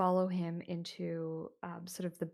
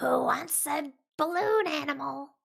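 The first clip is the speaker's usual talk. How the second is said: very loud, high, creepy clown voice; 9 semitones higher, 9 dB louder than usual. Voicing a creepy clown who asks children about balloon animals: creepy clown voice. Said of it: "That voice".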